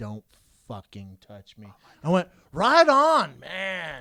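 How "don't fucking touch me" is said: close, quiet, hushed whisper under the breath. Retelling what a furious woman said into their ear during a hug, whispering. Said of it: "she whispers".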